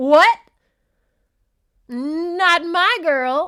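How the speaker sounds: outraged booming yell, very loud, very slow, drawn out. Retelling how a man burst through the door on his girl, mock-outraged outburst. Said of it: "Kool-Aid man burst through the door like".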